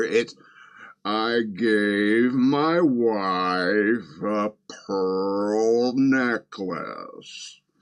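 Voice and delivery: mock drunken speech, slowed down. Recreating a downloaded clip as it plays on the YouTube player, Ben Shapiro at drunk speed. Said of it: "at drunk speed on the YouTube player".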